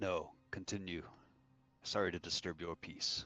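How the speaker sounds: very soft, quiet, hushed voice. A game master voices a character answering the group, very soft. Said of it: "he kind of says that very softly".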